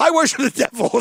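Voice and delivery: put-on Rhode Island accent. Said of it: "got that horrible Rhode Island accent".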